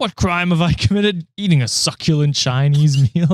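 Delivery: poor, clumsy, terrible fake Australian accent. Retelling what a man said while being arrested, terrible australian accent. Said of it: "I'm doing a terrible accent".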